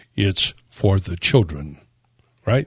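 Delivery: low, oily, unctuous, ingratiating voice. Showing another speaker how to deliver the phrase, in a low unctuous voice. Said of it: "say this in a low, unctuous voice".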